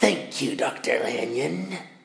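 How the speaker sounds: gravelly voice, words ground out. Reading a story aloud, a visitor at the door thanks Dr. Lanyon: gravelly Mr. Hyde voice. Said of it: "a gravelly voice says".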